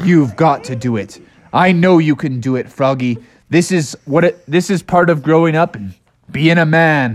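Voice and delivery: coaxing, encouraging, urging character voice. Telling a story, voicing Santa urging Froggy to knock: voicing Santa. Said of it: "And Santa was like".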